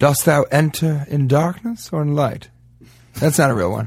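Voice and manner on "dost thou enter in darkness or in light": mock Shakespearean delivery, quieter. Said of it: "I don't know any Shakespeare".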